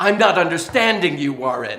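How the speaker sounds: put-on phone assistant voice with a British accent. Retelling a phone assistant speaking during a play: british accent. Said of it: "In a British accent".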